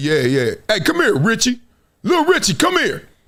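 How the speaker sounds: animated dad voice with swooping, swinging pitch. Acting out the kids' father calling the boy: imitating the kids' father. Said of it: "He come in the house, he's like".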